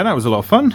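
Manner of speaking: dripping sarcasm. Finishing wrapping fiddly string around a tiny table, massively sarcastic. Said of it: "I'm saying that massively sarcastically".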